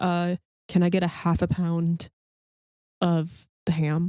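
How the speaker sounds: spooky flat low-pitched voice. Speaker imagines the character talking, in a flat, low Darksider voice. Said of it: "in his kinda Darksider voice, which is very flat and and low in his pitch".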